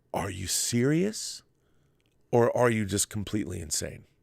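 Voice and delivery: ordinary talk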